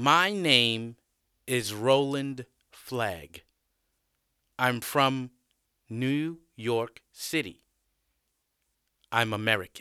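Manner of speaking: slow, deliberate speech, word by word. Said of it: "I'll speak slowly".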